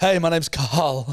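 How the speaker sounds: put-on frightened, terrified, stammering voice. Mocking how a name sounds: imitating a stuttering, terrified voice. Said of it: "it just sounds like you're terrified".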